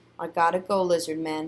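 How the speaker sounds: usual speaking voice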